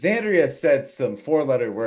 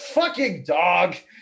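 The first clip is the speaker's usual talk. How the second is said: put-on all-out bellow, high, top of the lungs; 9 semitones higher than usual. Retelling a player yelling at his dog: imitating a yell at the top of lungs. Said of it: "at the top of his lungs yelled".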